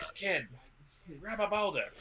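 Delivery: hollering yell, pitched high. Joking about heads being cut off in a Godzilla movie, do a Danny DeVito impression. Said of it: "My best Danny DeVito".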